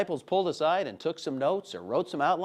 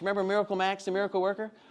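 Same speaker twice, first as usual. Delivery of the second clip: ordinary talk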